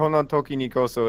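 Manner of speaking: ordinary talk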